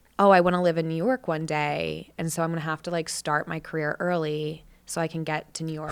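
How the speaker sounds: plain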